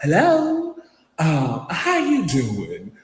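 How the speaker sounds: angelic, sweet, sing-song Southern belle voice. Retelling how someone first greeted them, in an angelic Southern belle voice. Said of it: "most beautiful angelic voice of a Southern belle".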